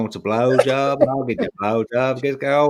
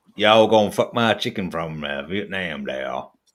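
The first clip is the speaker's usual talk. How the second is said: put-on Southern US accent; 6 semitones lower than usual. Asked by friends to do a southern american accent, putting on a redneck southern american accent. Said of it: "redneck American".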